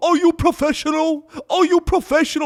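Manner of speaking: furious, high, shrill angry yelling. Describing an actor who yelled at people on a Batman set, imitating an actor yelling. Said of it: "he starts yelling at people".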